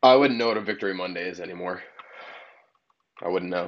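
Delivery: voice heavy with sickened disgust. Answering the other speaker's talk of a victory Monday: sick, disgusted voice. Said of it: "you can hear the sickness in his voice, just disgusted".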